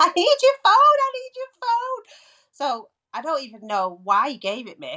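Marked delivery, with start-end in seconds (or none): 0.0-2.0 put-on, very high, very slow, loud, drawn-out scream. Retelling running up to the nearest passing car; retelling a scream. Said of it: "running up to the nearest passing car screaming".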